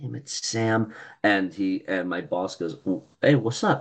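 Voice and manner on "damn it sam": quiet mutter, half to oneself, under the breath. Retelling getting a text while talking with the boss: muttered under breath. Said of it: "I kind of muttered under my breath".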